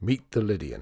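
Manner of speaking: plain reading voice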